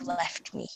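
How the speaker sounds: soft, ghostly half-whisper close to the ear. Retelling what a girl half-whispered in their ear: imitating a girl half-whispering. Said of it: "the girl, like, whispering in my ear".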